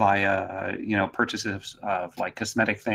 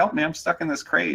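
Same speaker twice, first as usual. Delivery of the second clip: put-on little kid voice, childlike, much higher; 7 semitones higher than usual. Retelling how he talked to people at a crate, little kid voice. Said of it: "talking to them as, as a little kid".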